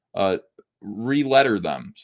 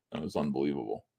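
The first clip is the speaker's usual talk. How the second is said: ordinary delivery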